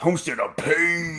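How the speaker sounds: drawled wrestling-promo growl.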